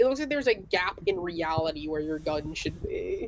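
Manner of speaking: ordinary talk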